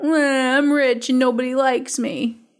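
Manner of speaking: put-on whinging, whiny little-baby voice. Mocking someone's excuse after calling it whiny: mock whiny voice. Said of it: "you sound like a whiny little baby".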